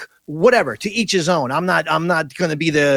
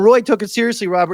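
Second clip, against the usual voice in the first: usual speaking voice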